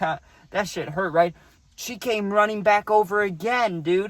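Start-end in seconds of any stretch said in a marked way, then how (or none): 0.0-1.3 acted speech broken by laughter. Retelling own reaction after being shoved off hay: imitating own past laughing. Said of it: "And I'm laughing".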